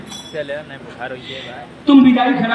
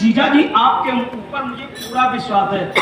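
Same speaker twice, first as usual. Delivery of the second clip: normal talking voice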